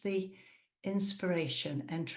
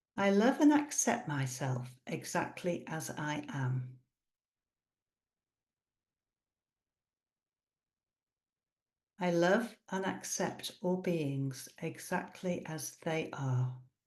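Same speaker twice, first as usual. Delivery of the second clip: deliberate, drawn-out, slow, unhurried reading. Guiding a breath-awareness practice, reading affirmations aloud slowly. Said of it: "So I'll read this slowly now".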